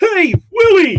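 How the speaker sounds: very high, very loud, belted put-on character voice. Recalling one of the first impressions ever practiced, in an ALF voice. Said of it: "I practiced doing the Alf voice".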